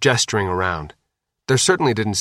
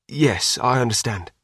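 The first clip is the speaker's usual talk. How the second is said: ordinary delivery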